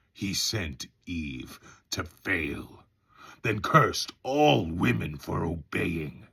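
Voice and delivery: low devil character voice. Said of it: "it is the devil character".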